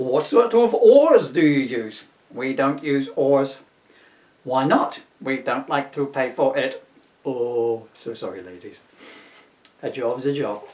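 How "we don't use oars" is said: silly, goofy put-on alien voice. An alien answering a visitor's questions, in a silly alien voice. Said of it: "doing the aliens in that silly voice".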